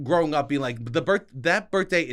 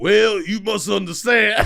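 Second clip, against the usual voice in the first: loud, booming put-on Southern accent; 6 semitones higher, 7 dB louder than usual. Speaker shows the only Southern accent they know, in a Foghorn Leghorn Southern accent. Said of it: "the only South I know is".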